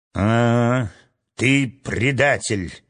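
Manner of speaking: contemptuous, scornful exclamation. Guard captain to a kneeling man who just confessed; contemptuous exclamation. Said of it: "презрительно воскликнул начальник стражи".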